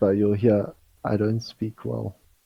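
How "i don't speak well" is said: barest, very faint half-whisper. Describing a scene where a figure answers back with the barest half-whisper. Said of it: "with the barest whisper".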